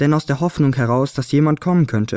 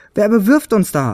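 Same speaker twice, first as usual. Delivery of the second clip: high-pitched, gasped-out delivery; 6 semitones higher than usual. Narrator reading Fionella after she is knocked down into straw, gasping. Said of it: "japste sie".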